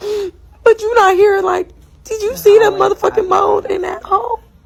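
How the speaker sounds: very high, tearful, sobbing crying voice, acted out. Retelling a complaint to a partner who said stop crying: imitating own past crying. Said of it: "stop crying".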